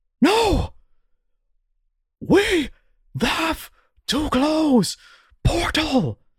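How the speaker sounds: high, swooping shout in broken Common, grammar dropped. Game master voicing Therasul, the elven champion, as he sees what is happening: broken-Common shout. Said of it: "in broken common, just shouts".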